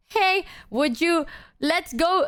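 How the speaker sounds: put-on charm, smooth and charming. Retelling how they asked someone to come along: retelling own words charmingly. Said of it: "I said it very charmingly".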